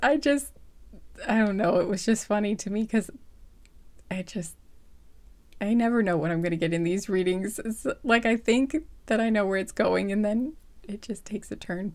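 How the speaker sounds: talking through uncontrollable laughter. Doing a reading for viewers and apologizing, laughing while talking. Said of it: "I can't stop laughing now".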